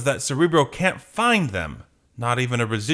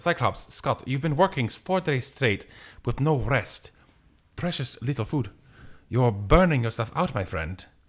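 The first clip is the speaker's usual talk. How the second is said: English with a put-on German accent; 3 dB quieter than usual. Voicing Nightcrawler speaking to Cyclops in a scene, with Nightcrawler German accent. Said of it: "What does German sound like?".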